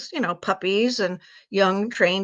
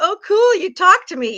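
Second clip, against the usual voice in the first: loud, very high, carefree happy dog voice; 12 semitones higher, 7 dB louder than usual. Explaining why dogs keep jumping, voicing a happy-go-lucky dog. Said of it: "you take a happy-go-lucky lab or pit bull, and they're like".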